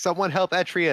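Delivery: mild, high-pitched shout. Voicing a character who calls out for help: shouting. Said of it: "she's gonna shout".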